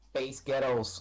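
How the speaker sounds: exaggerated put-on American-style pronunciation. Saying a phrase to show how it sounds, in an American accent. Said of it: "I'm going to say "space ghettos" in an American accent".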